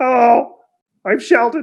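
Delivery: ogre voice, high. Voicing an ogre greeting the players in the middle of town: Sheldon the ogre voice. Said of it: "And he goes".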